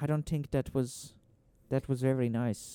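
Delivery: put-on Irish accent. Showing how the Irish drop the TH sound: Irish accent. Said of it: "the Irish, they don't say it's T H's".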